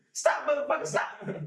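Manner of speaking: commanding, intimidating big bruiser's voice. Imitating the other speaker's voice, shouting stop: imitating a loud voice. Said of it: "You got that voice".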